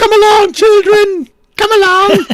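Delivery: shrill, loud, very high nanny voice, calling out. Taking turns doing voices, the speaker puts on a Mrs. Doubtfire voice. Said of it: "Missus Doubtfire as a".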